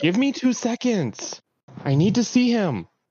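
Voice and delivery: very high shouted yell. A player voices his character yelling from the back mid-fight: yelling from the back. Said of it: "just yell".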